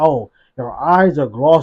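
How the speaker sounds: slow, deliberate, spelled-out cop voice. Retelling what a police officer says during a stop: imitating a police officer. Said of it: "a police officer will be like".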